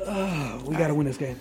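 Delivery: low, soft, calm and unbothered. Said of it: "they calmly were just like".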